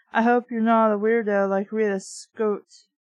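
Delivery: ordinary delivery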